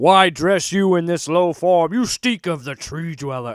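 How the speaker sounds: each word thumped out in brutish monster voice. Quoting the Hulk while talking about Hulk and Namor, loud thumping Hulk voice. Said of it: "loud, thuming voice".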